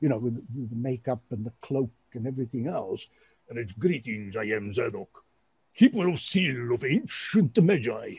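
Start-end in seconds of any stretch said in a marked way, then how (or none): 3.7-8.1 strange, odd, made-up put-on Sumerian accent. Retelling a cloaked, made-up character's greeting, in Zadok's strange Sumerian accent. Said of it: "he speaks in a strange Sumerian accent".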